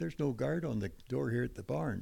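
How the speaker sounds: ordinary delivery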